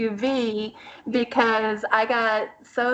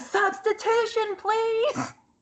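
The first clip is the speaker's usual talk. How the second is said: put-on, very high, shrill, all-out yelling; 11 semitones higher than usual. Retelling yelling at a baseball game in the ninth inning: retelling yelling for a substitution. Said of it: "I'm all yelling".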